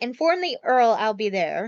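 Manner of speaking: put-on genteel, ladylike voice. Recapping a scene where Maid Marian addresses her nurse, in a lady voice. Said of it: "lady voice and is like".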